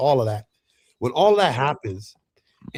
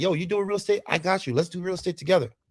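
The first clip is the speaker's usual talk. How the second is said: casual, easygoing, all-in tone, higher pitch; 6 semitones higher than usual. Retelling how the wife always went along with plans: imitating Dom. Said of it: "she's like".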